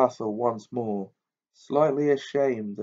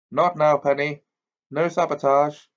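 hearty, heartily spoken; 4 semitones higher, 4 dB louder than usual. A young man answers his girlfriend, who asked to hold the Firebolt; hearty. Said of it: "said Percy heartily".

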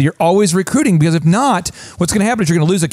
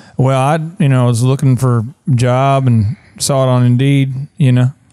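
low, listless, unenthusiastic, no-energy voice; 6 semitones lower than usual. Retelling a new hire's answer about the job: imitating a low-energy speaker. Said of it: "he has no energy".

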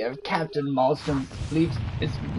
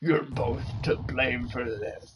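put-on old man voice, much lower; 3 semitones lower, 4 dB quieter than usual. Performer trying hard to make it sound old Manny Grunty: Manny Grunty voice. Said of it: "I'm really trying to make it sound old Manny Grunty".

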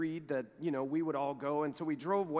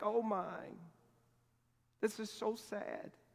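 drawn-out, slow, tearful weeping whisper; 6 semitones higher, 4 dB quieter than usual. Retelling how the missionary's wife wept at the ceremony: imitating Sally crying. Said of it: "she just continues to cry".

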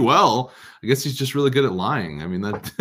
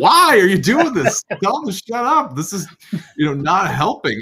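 very high-pitched hollering yell; 8 semitones higher than usual. Retelling watching an interview on tv: imitating screaming at the tv. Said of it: "I was just screaming at the T V".

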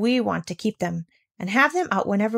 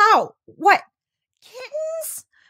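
piercing, very high-pitched shriek; 13 semitones higher, 4 dB louder than usual. A woman, just told the meowing comes from kittens, shrieking. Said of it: "shrieked Miss Rottermeier".

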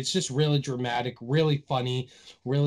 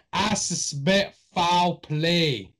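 terrible, god-awful put-on Boston accent; 4 semitones higher than usual. Imagining a character who changes his accent every case, god-awful Boston accent. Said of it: "god awful Boston accent".

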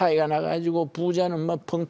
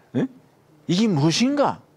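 put-on Gyeongsang accent, high and swooping; 7 semitones higher than usual. The speaker acts out someone first seeing manna: Gyeongsang dialect. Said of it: "경상도 사투리".

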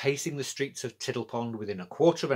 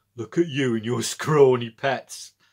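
loud, laughing, said through a laugh; 7 dB louder than usual. Narrator reads a character speaking to another as he passes the door, laughing. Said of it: "laughed Petrock".

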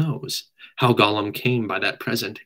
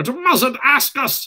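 shrill shriek, pitched very high; 14 semitones higher than usual. Narrator reads Gollum answering Bilbo's question about what he lost, shrieking as Gollum. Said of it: "shrieked Gollum".

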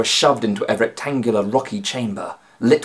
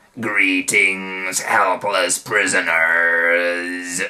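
low, grating voice, words drawn out; 4 semitones lower than usual. Reading Moo-Beard greeting his helpless prisoners, in a low grating voice. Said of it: "said Moo-Beard in his low, grating voice".

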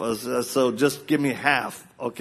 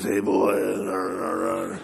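put-on raspy, worn-out, creaky call with "boy" drawn out; 5 semitones lower than usual. Imitating the dad's greeting to the speaker: imitating dad's rough voice. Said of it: "So he's like this".

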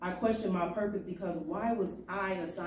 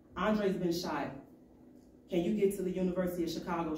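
ordinary talk, nothing marked

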